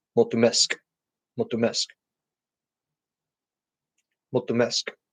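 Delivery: soft delivery, last syllable of mesk stressed.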